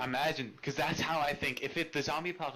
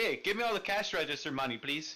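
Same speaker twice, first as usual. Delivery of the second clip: mock, overly polite put-on voice. Joking that Canadian robbers are nice while pointing a gun; mock-polite robber. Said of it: "they're really nice about it".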